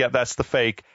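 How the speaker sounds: normal talking voice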